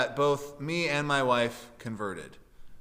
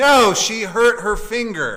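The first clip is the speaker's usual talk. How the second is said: very loud, high-pitched, heavily sarcastic put-on delivery; 6 semitones higher, 8 dB louder than usual. Retelling his reply to a nurse attendant asking if his wife is having a baby: retelling a very sarcastic reply. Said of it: "again in a very sarcastic tone".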